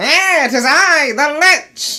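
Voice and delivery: very high, loud, fiendish squealing voice. Voicing the game's Lich as it appears: Skeletor voice.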